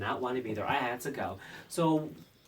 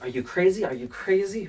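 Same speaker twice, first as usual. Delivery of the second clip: put-on thick Spanish accent, loud and high-pitched; 6 semitones higher, 7 dB louder than usual. Telling a story, the speaker quotes a man questioning him, heavy Spanish accent. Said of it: "with this heavy Spanish accent".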